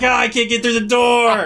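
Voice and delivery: put-on screaming. Retelling a show scene of a character stuck in a door: imitating someone screaming. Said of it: "And then he starts screaming".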